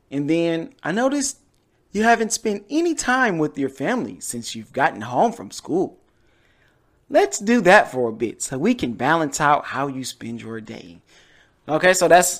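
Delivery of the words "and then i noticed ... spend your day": sing-song, motherly parent voice. Doing an impression of a parent talking to a child, in a mom voice. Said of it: "that's my like my mom voice".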